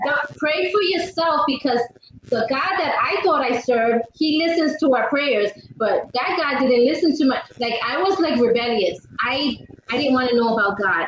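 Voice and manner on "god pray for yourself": sharp New York attitude, higher. Retelling a snapped reply to praying friends: New York attitude. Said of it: "My New York came out".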